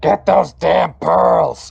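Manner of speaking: dampened, rough shout from afar. Voicing a character heard from underground behind a slammed gate: muffled voice. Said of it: "you hear a muffled".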